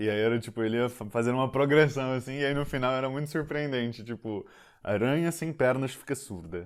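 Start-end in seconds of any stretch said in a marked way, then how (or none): 4.8-6.7 put-on European Portuguese accent, Portugal Portuguese. Retelling how a father tells a spider joke: imitating a portuguese accent. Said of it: "ele faz um sotaque".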